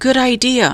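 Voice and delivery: small, little, high voice. Narrator reading Annie's reply in the dark, Annie's small voice. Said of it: "said Annie in a small voice".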